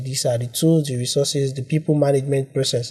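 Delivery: ordinary talk, nothing marked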